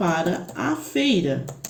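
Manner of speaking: slow, drawn-out, stressed a before feira.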